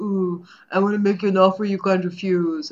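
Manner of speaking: cotton-mouthed mob-boss voice, as if cheeks stuffed. Describing a famous actor's mouth trick, imitating Marlon Brando as the Godfather. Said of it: "That's not how he sounds".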